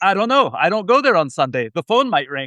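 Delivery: put-on Israeli accent. Quoting their dad's reply about working on Sundays, in a heavy Israeli accent. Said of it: "in a heavy Israeli accent".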